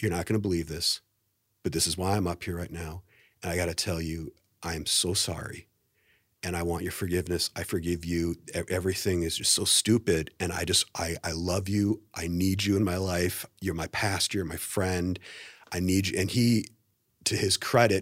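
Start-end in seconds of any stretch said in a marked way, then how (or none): 0.0-16.2 put-on tearful crying voice, lower and quieter. Retelling an apology to a pastor met outside the restroom: retelling a tearful apology. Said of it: "I start crying immediately".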